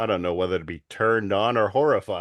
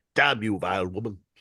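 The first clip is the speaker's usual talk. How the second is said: put-on voice with rolled R. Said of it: "he is kinda doing Stewie Griffin".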